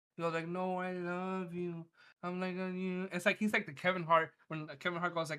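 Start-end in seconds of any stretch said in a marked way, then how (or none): 0.5-3.1 put-on drunken voice, very slow and affectionate. Retelling how a drunk father refused to leave the pool: imitating drunk dad. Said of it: "He drank his ass off".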